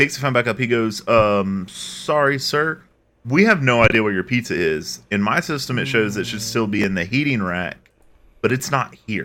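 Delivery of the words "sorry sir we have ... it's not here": usual speaking voice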